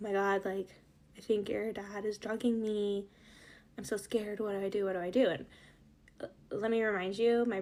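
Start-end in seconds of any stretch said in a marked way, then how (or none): 0.0-5.3 put-on panicked, freaking out voice. Retelling how their mom ran to the oldest brother, imitating mom freaking out. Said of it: "she's, like, freaking out".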